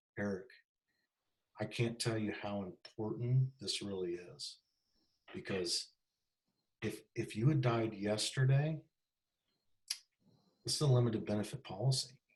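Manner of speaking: deliberate, grave, slow, low, serious voice. Demonstrating how to make something serious on the phone, slow serious voice. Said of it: "you slow the voice down".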